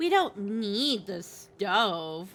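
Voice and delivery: put-on suggestive, flirty tone. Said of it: "you say this in a tone like".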